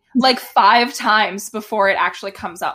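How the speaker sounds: ordinary talk, nothing marked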